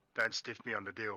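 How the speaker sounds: put-on whisper. Whispering a threat to a character while squeezing his hand: whispering in character. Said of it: "lean in and whisper".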